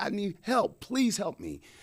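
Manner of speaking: high-pitched shouted holler. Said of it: "I remember hollering".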